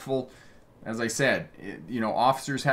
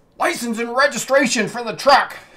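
very loud, very high shouted yell; 12 semitones higher, 10 dB louder than usual. Retelling a traffic stop, imitating the police officer yelling up to the truck. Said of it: "he yells up".

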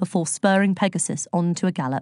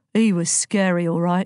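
plain reading voice

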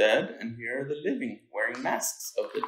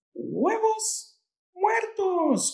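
very high, loud, delighted cheering exclamation; 5 dB louder than usual. A character greets the food on her plate in a story read aloud, cheering. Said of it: "cheered Estrellita".

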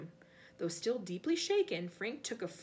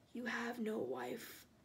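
icy, deliberate, slow and very hushed voice; 6 dB quieter than usual. Answering a man who threatens him with the police: cold, very quiet. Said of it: "said the cold voice very quietly".

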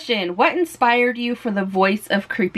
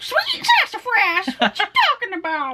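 put-on creepy granny voice, much higher pitch; 11 semitones higher than usual. Trying the show's catchphrase again in another voice, creepy granny voice. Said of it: "my creepy Granny voice".

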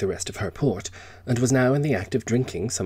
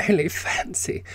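very high, weak, faint voice; 10 semitones higher than usual. Evie responds to Kenneth, faint. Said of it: "said Evie faintly".

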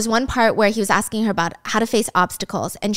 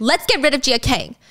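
mock, put-on screaming; 3 semitones higher than usual. Recounting a woman plotting after being thrown out; retelling a scream. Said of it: "And she's screaming".

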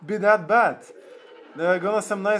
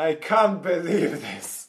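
laughing hard while speaking; 2 semitones lower than usual. Streamer reacting to their raid team's damage, laughing. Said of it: "I'm laughing so hard right now".

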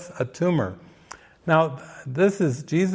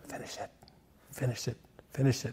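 gentle, very soft, barely there, repeated whisper; 2 semitones lower, 13 dB quieter than usual. Quoting a repeated message from the movie: imitating a soft whisper. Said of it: "It's like a whisper".

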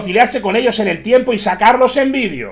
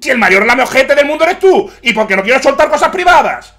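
angry, menacing, threatening tone; 4 semitones higher than usual. You don't want to reveal private things but end up doing so, getting angry, threatening tone. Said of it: "se empieza a enfadar en tono amenazante".

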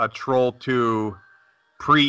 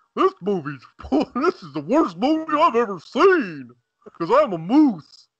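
very high, swooping voice, stretched out long; 11 semitones higher than usual. Joking that the moose calls it the worst movie: Bullwinkle voice. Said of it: "Bo Winkle's like".

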